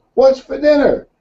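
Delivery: loud, shrill, very high-pitched yell, close up. Telling a joke, the husband yells right into her ear: imitating a man yelling in her ear. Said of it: "right up to her ear and yells".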